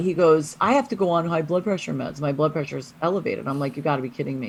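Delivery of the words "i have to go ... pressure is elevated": ordinary delivery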